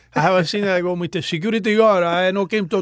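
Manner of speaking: put-on halting, broken English with a Cuban accent. Retelling how the speaker talked just after arriving from Cuba, broken English. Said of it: "I talked like this".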